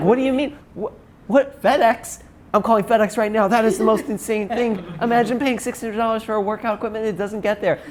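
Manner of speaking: high, indignant, outraged ranting yell. Acting out a guy yelling on a call about a missing delivery, retelling a guy's outraged yelling. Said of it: "he'll start yelling at like fake names".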